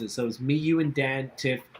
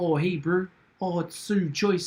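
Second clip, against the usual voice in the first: higher, put-on New Zealand accent; 5 semitones higher than usual. Imitating one of the sisters who run a winery: imitating a New Zealand accent. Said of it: "speak with a serious New Zealand accent".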